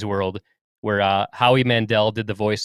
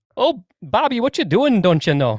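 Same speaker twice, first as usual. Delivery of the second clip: very high, sing-song Wisconsin accent tipping Irish; 10 semitones higher than usual. Asked to say it again, trying a Wisconsin accent that sounds Irish. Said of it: "That's that's an Irish accent".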